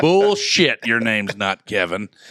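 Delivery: ordinary delivery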